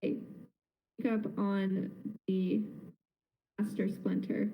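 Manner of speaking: soft, quiet whisper. Whispering in character to a companion before scaring someone: whispering. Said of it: "kind of whisper to him".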